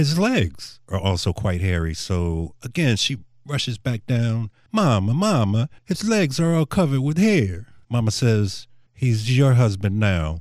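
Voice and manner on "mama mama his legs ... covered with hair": pitched-up put-on Italian accent. Telling a joke, the bride rushes down to her mother, in an italian accent. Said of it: "she does have her Italian accent".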